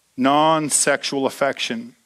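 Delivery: drawn out very slowly. Speaking to an audience that looks confused, repeating a term, said really slowly. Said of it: "I'm going to say it really slow".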